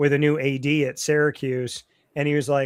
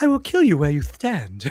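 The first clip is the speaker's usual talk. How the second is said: king voice with a lisp on s. Describing an actor's role as a king, imitating his soft lisping voice. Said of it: "he has like a lisp and a very like soft voice".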